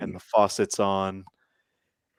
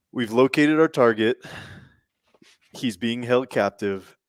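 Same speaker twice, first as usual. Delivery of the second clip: normal talking voice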